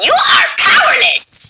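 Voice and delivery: very high, raspy voice with Brazilian accent. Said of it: "Ray's would go".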